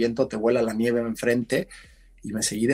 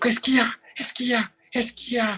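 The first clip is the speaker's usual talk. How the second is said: acted, insistent shouting, repeated over and over; 13 semitones higher than usual. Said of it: "me vuelve a empujar y me dice".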